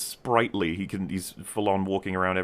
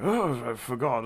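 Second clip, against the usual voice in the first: put-on frail doddering old man voice, higher; 4 semitones higher than usual. Describing how an old hunched man talks, imitating a frail old man. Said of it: "He'll literally talk like this".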